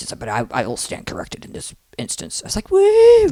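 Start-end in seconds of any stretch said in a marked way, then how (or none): 0.2-2.4 soft, grumbly, mumbled speech. Telling a listener how a teacher admitted he was wrong, imitating a grumbly voice. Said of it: "And he did like grumbly".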